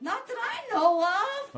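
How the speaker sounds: loud, high-pitched shouting yell. Asked about drugs while an ambulance is on the way, yelling. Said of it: "You don't have to yell".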